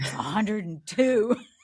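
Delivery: loud, furious shout, as angry as possible. Retelling crossing a hundred-mile finish line, retelling an angry shout. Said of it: "I shouted in this angriest voice".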